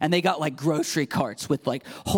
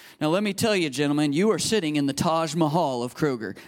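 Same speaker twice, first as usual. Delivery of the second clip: ordinary delivery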